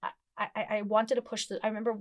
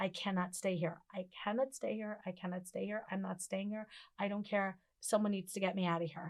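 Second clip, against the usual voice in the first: imitated tearful, crying voice, spoken quieter; 6 dB quieter than usual. Retelling hearing the doctor's news in the hospital: imitating own past crying. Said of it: "burst out into this, like, crying".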